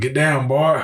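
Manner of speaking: put-on Louisiana accent. Retelling how a guy on patrols picked up their talk, imitating a Louisiana accent. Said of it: "He already had formed a Louisiana accent".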